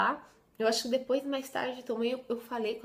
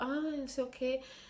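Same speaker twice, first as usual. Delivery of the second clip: acted slow, drowsy, just-woken sleepy voice; 5 dB quieter than usual. Retelling a phone call that woke up the mother: imitating a sleepy just-woken voice. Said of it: "aquela voz assim, sabe, de quem tava dormindo".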